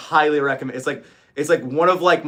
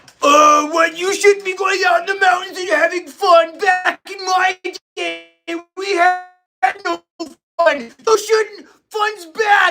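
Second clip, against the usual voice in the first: very high-pitched, preachy, mocking killjoy tone; 4 dB louder than usual. Mocking the vet bros who say fun is bad: mocking imitation of a vet bro. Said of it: "the vet bros that are like".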